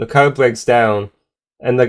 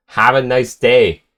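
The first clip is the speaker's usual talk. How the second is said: ordinary talk, nothing marked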